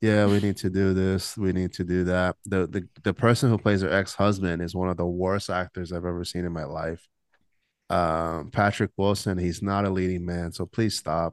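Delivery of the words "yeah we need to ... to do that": monotone impression of a movie-actress voice. Reviewing a movie, imitating Halle Berry's flat monotone delivery in it. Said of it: "She's monotone".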